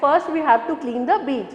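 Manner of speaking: ordinary talk, nothing marked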